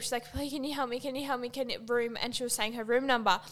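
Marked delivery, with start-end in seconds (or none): 0.3-2.2 mock-crying, pleading delivery. Retelling what a young girl said to the people there, imitating someone crying and pleading. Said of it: "She's crying".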